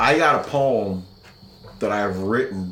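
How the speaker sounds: ordinary talk, nothing marked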